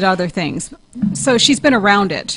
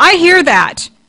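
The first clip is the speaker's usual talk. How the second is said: put-on really loud, pitched-up shouting voice; 9 semitones higher, 7 dB louder than usual. Retelling how a seance guest suddenly spoke up: imitating someone saying it really loud. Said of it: "really loud".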